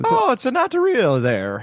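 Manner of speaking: very high, swooping, sing-song bad Italian accent. Putting on an accent in a group conversation, a bad Mario accent. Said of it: "Why is every accent just bad Mario?".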